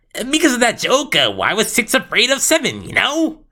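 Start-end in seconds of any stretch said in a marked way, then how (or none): 1.3-3.3 pitched-up, swooping voice full of energy. Showing off a character voice for a joke: Seven voice, pitched-up and energetic. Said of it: "here's my Seven voice here".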